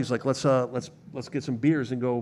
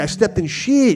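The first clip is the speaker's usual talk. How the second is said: corny put-on Spanish accent, very high and loud; 9 semitones higher, 7 dB louder than usual. Retelling a story, the speaker quotes another man in a corny spanish accent. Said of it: "My Spanish accent is corny".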